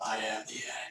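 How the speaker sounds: put-on monster voice. Showing the voice used for liches in D and D: lich voice. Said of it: "that's the voice".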